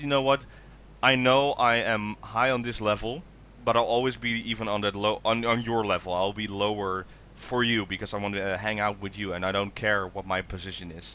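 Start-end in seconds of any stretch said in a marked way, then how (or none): none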